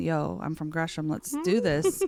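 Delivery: ordinary talk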